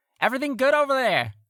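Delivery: very high-pitched, far-carrying call. Voicing a sailor on another boat, calling out across the water. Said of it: "a voice call out from that boat".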